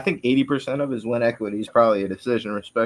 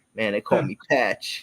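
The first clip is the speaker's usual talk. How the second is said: put-on kid voice putting on a tough-guy front. Telling about a teased bald kid, quoting his comeback: imitating a kid acting tough. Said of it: "he tries to act all hard and shit".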